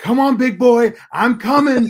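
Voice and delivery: shrill, very high, full-volume taunting scream. Retelling how someone started screaming at a guy, imitating someone screaming. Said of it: "he just starts screaming at the guy going".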